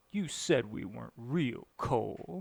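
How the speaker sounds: put-on sulky tone. Retelling the astrophysicist lady's line to Cole: mock-pouty voice. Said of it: "in a real pouty voice".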